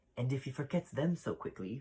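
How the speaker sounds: plain reading voice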